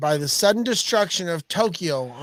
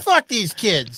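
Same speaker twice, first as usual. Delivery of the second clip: put-on grumpy old man voice. Mocking another speaker's feeling by acting a grumpy old man: put-on grumpy old man voice. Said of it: "I'm a little grumpy old man".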